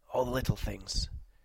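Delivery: rasping voice. Reading a man's answer to a woman who questioned him, rasping. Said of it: "he rasped".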